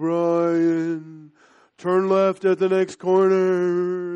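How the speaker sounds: loud, slow booming voice, one name drawn out. Imagining a message cast down from heaven, in a God voice. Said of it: "in this God voice".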